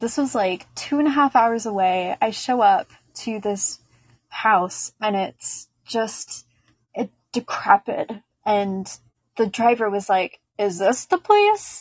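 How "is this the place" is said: mock incredulous tone, much higher. Arriving at a decrepit house, retelling the driver's question, imitating an incredulous driver. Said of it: "Like very incredulously".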